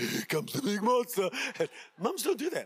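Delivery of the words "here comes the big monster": playful big monster voice. Acting out a dad rumbling with his kids: dad playing the monster. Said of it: "being the monster".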